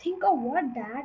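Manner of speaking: usual speaking voice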